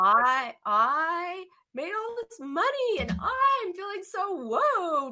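high, slow, proud, excited voice. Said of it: "notice how you went from".

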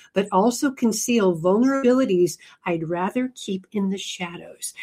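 ordinary delivery

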